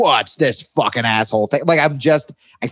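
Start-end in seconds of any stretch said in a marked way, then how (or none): 0.0-1.6 put-on angry, raging outburst. Retelling getting cut off while driving: imitating himself sounding like his dad. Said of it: "I sound like my dad suddenly".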